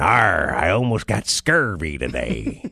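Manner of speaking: very low, slow, ghostly pirate voice. Acting out what the ghost pirate husband says: voicing pirate ghost Jack. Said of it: "He's all talking about".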